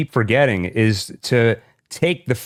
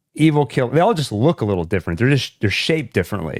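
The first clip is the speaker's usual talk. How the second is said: normal talking voice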